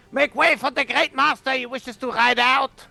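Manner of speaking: high-pitched, imposing, forceful yell. Standing up on a wagon, shouting to clear the way: imposing yell. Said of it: "in my most, uh, imposing way and I yell like".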